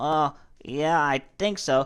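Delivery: put-on groggy voice. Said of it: "comes up all groggy".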